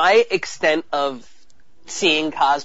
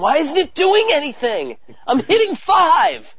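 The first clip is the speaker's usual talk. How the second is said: mock frantic, very high, swooping yell; 10 semitones higher than usual. Retelling playing a game for a free t-shirt, re-enacting yelling into the microphone. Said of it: "I'm yelling into the microphone".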